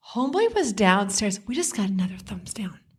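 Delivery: ordinary delivery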